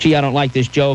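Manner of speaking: ordinary talk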